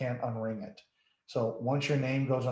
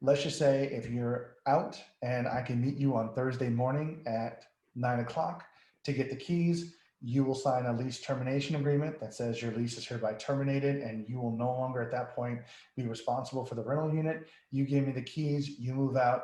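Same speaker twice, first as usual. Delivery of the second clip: ordinary delivery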